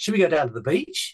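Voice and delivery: rising tune at the end, lifting on beach. Describing how Antipodeans talk, the speaker imitates them, imitating rising intonation. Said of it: "the tone of voice when they talk to you goes up".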